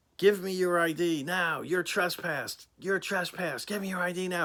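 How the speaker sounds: high, screaming delivery. Retelling a trooper's orders at the door: imitating someone screaming. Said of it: "screaming at me".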